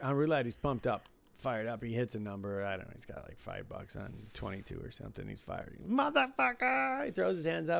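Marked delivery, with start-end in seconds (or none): 5.8-7.0 mock very high-pitched, excited, celebratory scream. Speaker retells a pumped-up man hitting a number, retelling his scream. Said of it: "he's screaming".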